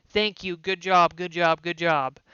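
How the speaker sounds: snide, sarcastic, backhanded tone, words repeated. Describing how players talk to each other in the game: sarcastic "good job". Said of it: "sarcastically saying".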